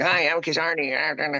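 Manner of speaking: tiny, high, squeaky, sped-up cartoon-critter voice. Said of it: "I sound like Alvin and the Chipmunks".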